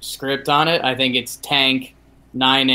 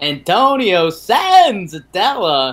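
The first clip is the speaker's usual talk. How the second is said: raised, swooping sports announcer voice; 7 semitones higher, 5 dB louder than usual. Asked to say a player's name, in a Bob Uecker voice. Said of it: "Say Senzatella in your Bob Uecker voice".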